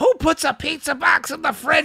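very high, shrill, frantic, freaked-out ranting yell. Telling a story about a pizza box left in the fridge: imitating mom yelling. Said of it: "She's yelling about this".

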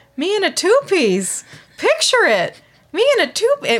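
put-on Minnesota accent. Recapping a favorite moment, quoting Marshall's mom in her Minnesota accent. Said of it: "With her like Minnesota accent".

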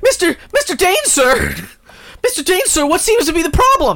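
very high, rushed, flustered blurt. Acting out a new intern running in to the boss: flustered intern voice. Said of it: "the new intern comes running".

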